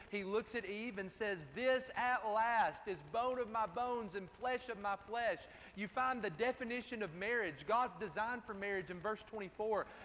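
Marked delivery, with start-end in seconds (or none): none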